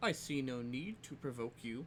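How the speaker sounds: slow, patronizing, condescending tone. Voicing a character who denies trying to provoke someone: condescending tone. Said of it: "he says kind of condescendingly".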